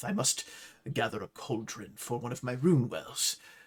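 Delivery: quiet muttering under breath. Narrator voicing a customer heading to the cauldron section, muttering under his breath. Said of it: "You hear him under his breath".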